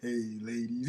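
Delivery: put-on low, deep sway voice. Imitating how the other speaker sounded in the intro: deep sway voice. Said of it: "you still come through with the fucking deep sway".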